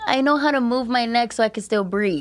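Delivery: ordinary talk, nothing marked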